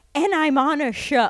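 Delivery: exasperated, high, loud frustrated outburst. Retelling how a crying reality show contestant sounded: imitating someone frustrated. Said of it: "she was so frustrated".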